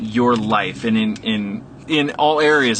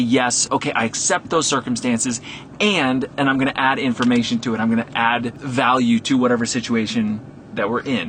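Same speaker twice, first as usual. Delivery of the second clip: plain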